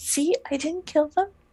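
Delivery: hushed whisper. In a role-play scene, a character turns to a companion, whispering. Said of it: "turns and whispers to Lady Charlacy".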